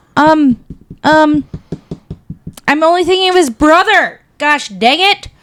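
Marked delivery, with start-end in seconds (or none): 2.6-5.1 exasperated, frustrated yelling outburst. Failing to recall an actor's name during a chat: yelling in frustration. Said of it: "Why are you yelling?".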